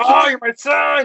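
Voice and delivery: very high, loud, bellowing yell. Trying out a voice for a grandpa character: yelling Renzo's grandpa voice. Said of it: "Just yells".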